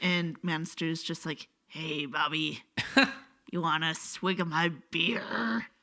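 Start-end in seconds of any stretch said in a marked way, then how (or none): 1.7-5.7 mock monstrous man's voice. Joking about a monster calendar character talking to Bobby, Manster voice. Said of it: "how to do a monster voice or a man voice".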